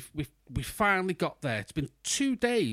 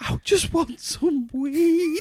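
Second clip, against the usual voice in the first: mock tearful, very high and very slow crying; 12 semitones higher, 5 dB louder than usual. Retelling a friend asking for weed in a bar: imitating Carl crying. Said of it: "it's like he started crying and he just went".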